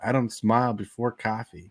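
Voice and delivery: ordinary talk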